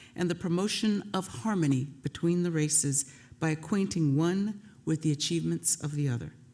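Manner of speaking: normal talking voice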